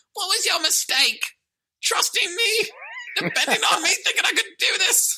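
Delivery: high, squeaky voice. Retelling a movie scene, voicing Jaden's lines in a squeaky Jaden impression. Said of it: "Jaden squeaks again".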